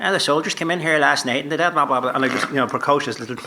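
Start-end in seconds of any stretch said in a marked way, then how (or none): 0.0-2.1 put-on rambling, blathering talk in a Northern Irish accent. Recalling his audition as a little boy, launching into a Northern Irish accent. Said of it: "So I had that accent, and I just started".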